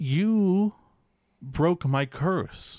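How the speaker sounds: broken English with a long, drawn-out "you". Retelling what he said to Maurice, in his best broken English. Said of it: "in my best broken English".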